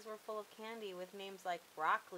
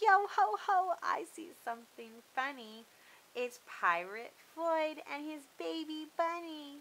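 gleeful, high, loud, drawn-out squeal of delight; 8 semitones higher, 7 dB louder than usual. A narrator reads a character spotting friends hiding behind garbage cans, squealing with delight. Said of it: "Leona squealed with delight".

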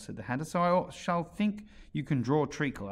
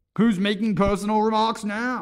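raised, gloating, triumphant voice; 7 semitones higher, 6 dB louder than usual. Narrator reads the Hatter's reply to Alice, triumphant. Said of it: "the Hatter asked triumphantly".

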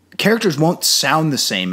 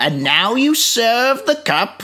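put-on British accent, high-pitched, teacher voice; 7 semitones higher than usual. Retelling how he mimicked the teacher, british accent imitating the teacher. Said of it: "he starts doing this British accent".

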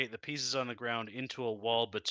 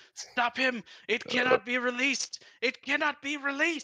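shrill, frantic, high, loud yell; 13 semitones higher, 7 dB louder than usual. At the end of the round, Exethanter comes up, yelling. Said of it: "he'll start yelling".

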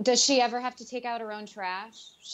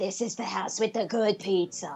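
uncanny, scavenging raccoon-like animal voice. Imagining raccoons showing up at a friend's party house; raccoon voice. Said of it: "I love your raccoon impression".

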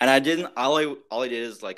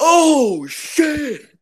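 sudden, shrill, startled, loud shocked swearing cry; 10 dB louder than usual. Retelling being scared by a splash: imitating own startled loud swear. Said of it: "extremely fucking loud".

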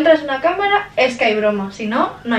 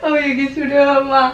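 slow, laughing a lot through the words. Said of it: "Te estás riendo mucho".

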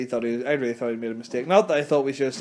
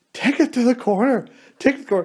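mock, very high, shrill screaming, repeated; 11 semitones higher, 4 dB louder than usual. Retelling watching a match on tv: retelling screaming at the tv. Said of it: "I was screaming at him".

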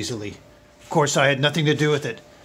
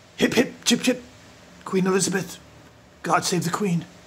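sexy, high-pitched fake South African accent; 5 semitones higher than usual. In a comedy video about making tea, speaking in a sexy fake south african accent. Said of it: "in my sexy South African fake voice".

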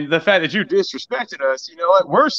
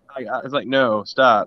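plain

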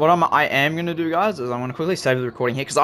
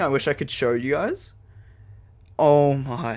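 genuinely shaking, shaken up, trembling voice. Talking to viewers after replaying a scary game stage, genuinely shaking. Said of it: "I'm genuinely shaking".

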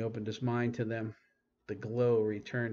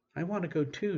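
firm, insistent voice, pitched up; 7 semitones higher than usual. Dougie insists on going along with the others: insistent. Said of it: "Dougie insisted".

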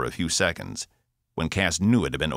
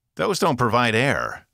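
condescending tone with a pitched-up voice; 7 semitones higher, 4 dB louder than usual. A crewman answers Zenfor, who offers to go, condescending tone. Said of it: "his tone condescending".

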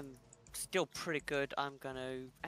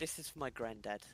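soft, hushed half-whisper under the breath; 5 semitones lower, 6 dB quieter than usual. Delivering the killing blow in character in the game: half-whispering. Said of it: "but I'm gonna whisper in".

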